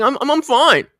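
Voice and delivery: crying, high, loud, stammering over the first word. Retelling how she answered that she was fine, imitating someone crying. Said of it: "And she's crying. She's like".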